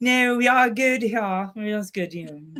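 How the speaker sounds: put-on British accent. Acting out an imagined friend answering in the middle of a scene: British accent. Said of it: "she'll be talking in a British accent".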